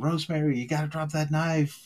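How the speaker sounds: acted-out screaming. Recounting a hospitalized man who hallucinated movie scenes, retelling his screaming. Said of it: "just then start screaming".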